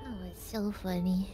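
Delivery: very low, very flat deadpan delivery. Commenting during a game stream, in the most deadpan voice. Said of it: "You said in the most deadpan voice".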